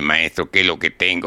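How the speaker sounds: normal talking voice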